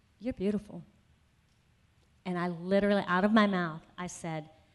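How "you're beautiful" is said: quiet, soft, hushed whisper. Retelling hearing a voice while looking in the mirror: imitating a whisper. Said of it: "I hear him whisper".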